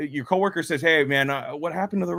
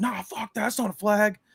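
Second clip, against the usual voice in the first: play-acted mild, high-pitched half-yell; 6 semitones higher than usual. Retelling watching a game the night before: imitating his own yelling. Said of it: "I'm yelling".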